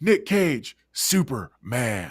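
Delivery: heavy, dramatic pause held between words. Showing how a line has to be said, Nicolas Cage impression, dramatic pause. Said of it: "this is how you have to say it as Nick Cage".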